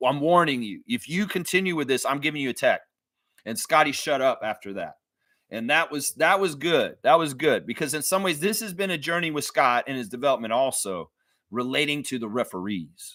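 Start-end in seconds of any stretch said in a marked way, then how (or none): 0.0-2.8 emphatic, firm delivery. Retelling what one man told another after their back-and-forth, retelling an emphatic warning. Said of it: "very emphatically told him".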